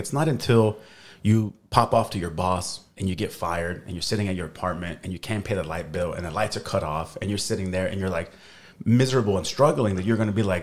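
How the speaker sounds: ordinary delivery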